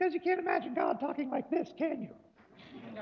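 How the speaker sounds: high, squeaky little voice, tiny and high.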